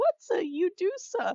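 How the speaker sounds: very high-pitched alien sidekick voice. Retelling a plot as Jar Jar wakes up and asks: Jar Jar voice. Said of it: "Jar Jar wakes up and he's like".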